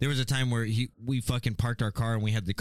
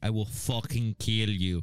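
put-on Russian accent, menacing, played serious. Retelling how a man would come down and speak in a Russian accent. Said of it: "he'd come down in a Russian accent".

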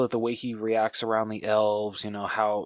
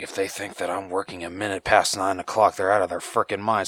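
whispered mutter, lower; 3 semitones lower than usual. Explaining why a character makes her top five, quoting him in a whisper. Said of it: "like kind of like whispering".

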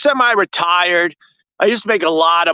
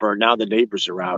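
soft, hushed half-whisper, dropped low; 8 semitones lower, 5 dB quieter than usual. Noticing the neighbors have come outside: half-whispering. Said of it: "now I gotta whisper".

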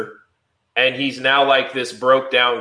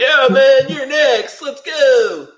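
surfer-dude voice, higher, louder, slower; 13 semitones higher, 6 dB louder than usual. Discussing Mortal Kombat voices with a co-host, doing Kabal surfer-dude voice. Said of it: "he literally sounds like almost like a surfer dude".

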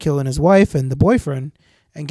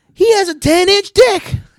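screaming, higher and louder; 5 dB louder than usual. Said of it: "he kept screaming at him".

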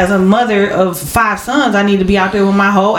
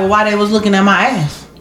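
plain

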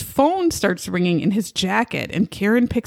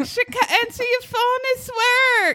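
put-on woman's voice, yelling, higher pitch. Retelling a scene where she yells up the stairs: imitating Karen yelling. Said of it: "She's yelling up the stairs".

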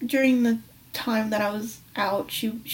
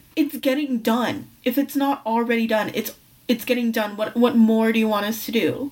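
plain

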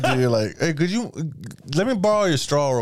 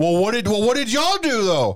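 mock argumentative voice, pitched higher; 8 semitones higher than usual. Imitating how a girlfriend argues, pleading a case to executioners: imitating girlfriend arguing. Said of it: "like how my girl argues with me".

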